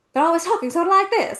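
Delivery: put-on old-film East Coast talk. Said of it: "which to me always sounds East Coast".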